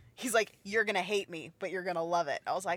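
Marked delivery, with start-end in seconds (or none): 0.6-2.4 put-on bassy voice, pitched lower. Retelling what a friend said before voicing a character: imitating Bryant in a bassy voice. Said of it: "he tried to do, like, a bassy voice right there".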